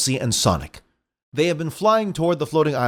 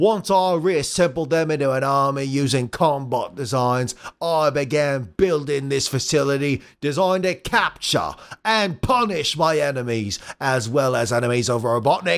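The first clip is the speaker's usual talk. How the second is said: put-on Australian robot villain voice. Voicing a tank-bodied robot villain's monologue: Australian Robotnik voice. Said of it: "Australian Robotnik".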